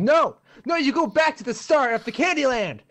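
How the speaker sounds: very high, furious, shrill, full-throated yell. Retelling snapping during an online Candyland game, acting out a furious shout. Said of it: "So I'm started like shouting like".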